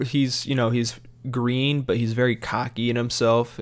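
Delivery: normal talking voice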